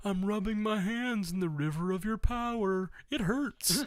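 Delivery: high voice, ridiculing, poking fun. Mocking a character for standing around and watching: imitating Scott. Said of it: "who's like".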